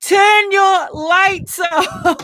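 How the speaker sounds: very slow, loud, high, drawn-out Scottish shout. Recalling someone shouting at a dark sky campsite, retelling a loud scottish shout. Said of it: "a rather loud Scottish voice shouting".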